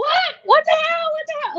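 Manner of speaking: very high, frantic, bewildered, panicked outburst. Retelling how the speaker's father reacted to being screamed for, imitating someone freaking out. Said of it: "Like he's freaking out".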